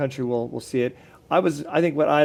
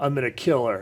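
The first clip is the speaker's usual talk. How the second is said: low, deep cartoon muscleman voice. Describing a cartoon, voicing its super muscle guy in a low voice. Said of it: "super muscle guy, low voice".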